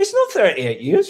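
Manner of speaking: put-on shouting. Retelling a reaction to a TV episode: imitating shouting at the TV. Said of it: "I was shouting at the T V".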